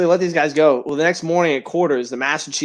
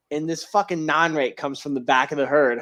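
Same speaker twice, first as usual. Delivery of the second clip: normal talking voice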